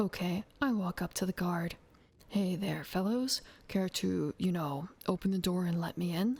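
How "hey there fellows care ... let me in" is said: suave, cool, easygoing, smooth, charming delivery. Acting out a character asking a guard to open the door: suave and cool. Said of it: "I'm being all suave and cool".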